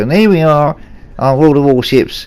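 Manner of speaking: faked live sports-commentator voice. Doing an impression while commentating a match: Murray Walker impression. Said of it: "here I'm going to do my impression of, of Murray Walker".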